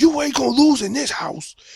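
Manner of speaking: very high, fired-up, frenzied hollering yell. Retelling what Michael Irvin said on video, imitating Michael Irvin yelling. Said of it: "he's yelling".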